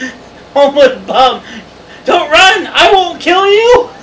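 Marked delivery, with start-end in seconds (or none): 2.0-3.8 high, loud mock yell. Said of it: "you're yelling at this".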